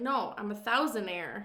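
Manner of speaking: plain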